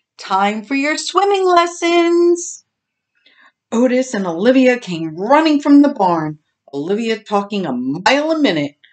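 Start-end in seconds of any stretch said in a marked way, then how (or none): 0.2-2.6 very high, carrying voice calling out. Summoning two others for their swimming lessons, called out. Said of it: "Oakley called out".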